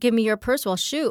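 put-on sharp, threatening bark, urgent but contained. Retelling how a young woman with a gun demanded the purse: imitating someone yelling. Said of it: "she yells at me and says".

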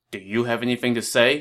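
ordinary delivery, nothing marked

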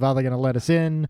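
plain

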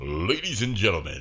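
on-air radio announcer voice. Describing making announcements on the microphone, in a radio announcer voice. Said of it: "radio announcer voice".

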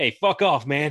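put-on sudden slip into a Brooklyn accent. Recounting a scene where a character drops his Euro accent, in a Brooklyn accent. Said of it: "he slips into a Brooklyn accent".

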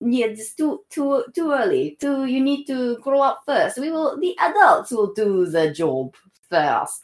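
put-on Russian accent. Voicing imagined regents telling a young ruler to wait, in a russian accent. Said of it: "the Russians are there to keep them moderate".

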